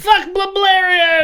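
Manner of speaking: acted-out scream. Telling a story, recreating what was screamed before everyone raised glasses: retelling a scream. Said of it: "I screamed".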